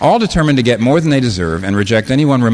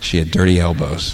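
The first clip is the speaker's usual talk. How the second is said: mock-sad voice, much lower; 6 semitones lower than usual. Retelling a man's comment to you about his date, retelling it said sadly. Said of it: "he said sadly to me".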